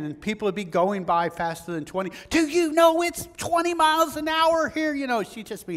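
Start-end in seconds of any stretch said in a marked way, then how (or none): 2.3-4.9 very high, loud, shrill scolding scream. Speaker acting out a woman yelling at passing drivers, imitating a woman screaming. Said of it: "she would be screaming at people".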